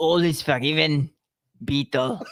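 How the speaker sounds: slow, deliberate movie-star voice, each word laid down. Reading a comic strip aloud as the Sarge: Arnold voice. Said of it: "I'm gonna try Arnold".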